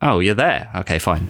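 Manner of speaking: ordinary delivery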